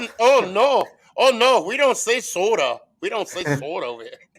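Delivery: put-on Minnesota accent. Imagining how people in Minnesota would answer about the word soda: Minnesotan accent. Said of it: "see if they say it in their accent".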